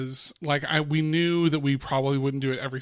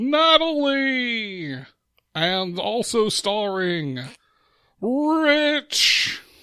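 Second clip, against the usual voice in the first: loud, high-pitched, big game-show announcer voice; 8 semitones higher, 5 dB louder than usual. Opening the podcast Not Suitable for Adults, doing a loud Don Pardo impression. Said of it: "I feel like I was loud".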